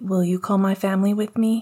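usual speaking voice

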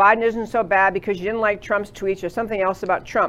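normal talking voice

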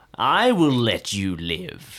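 grudging, hostile voice. Speaking in character to an elf while glaring at him. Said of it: "I'm going to glare at him and I'm going to say".

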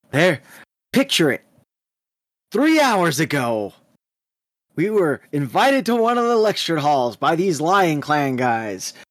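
dramatic, theatrical, swooping anime-style narrator voice. Imitating a friend who gets more theatric telling a story, mock anime-trope narration. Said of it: "but our anime pro tag, [name], because that's how he is now, apparently. Every trope that he's doing".

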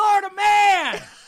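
shouting. Announcing the next segment after being asked to yell: yelling the segment title. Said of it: "You asked me to yell".

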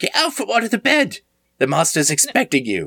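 put-on very high, swooping older woman voice. Voicing an older maid who finds a player under the bed: voicing an older maid. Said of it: "you see a woman in a maid's outfit".

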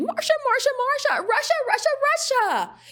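very high-pitched sitcom-character voice. Putting the cost of the Mueller investigation into context, break into your best Marcia Brady impression. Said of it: "let me do it in my best Marsha Brady".

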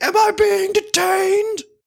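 shrill, slow, drawn-out, insistent scream. Acting out a made-up talk with a cop, suddenly switching to pretend screaming. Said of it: "just start screaming".

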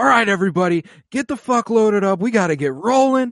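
loud, high-pitched yelling. Retelling the meteor shower scene, the speaker voices Gorn: retelling Gorn yelling instructions. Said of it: "he's just yelling instructions like".

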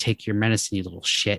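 ordinary talk

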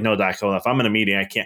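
ordinary talk

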